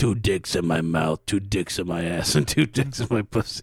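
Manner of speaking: put-on raspy old woman voice. Retelling an interview, the speaker quotes an old actress: raspy old woman impression. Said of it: "is that how you got raspy then?".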